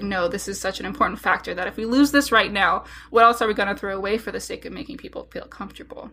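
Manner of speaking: normal talking voice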